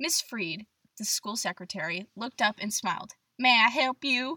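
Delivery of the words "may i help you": slow southern drawl with long stretched vowels. Reading a story aloud, voicing the school secretary: Miss Freed, Southern accent. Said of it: "She has a southern accent, I just decided right now".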